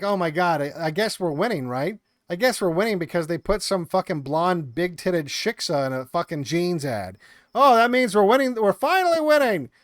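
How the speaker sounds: ordinary delivery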